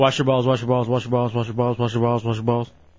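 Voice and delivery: rapid-fire delivery. Radio host takes up the dare to repeat a phrase quickly, said really fast. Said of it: "Try saying wash your balls real fast".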